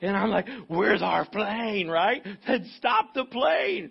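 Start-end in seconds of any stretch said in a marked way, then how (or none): 0.7-1.9 put-on breathless, rushed speech. Retelling running up to an airport official late for a flight, imitating being out of breath. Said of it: "I am out of breath".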